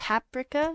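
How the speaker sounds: paprika with stress on first syllable pap. Explaining how to say paprika, stress on pap. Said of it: "you put the emphasis on the pap".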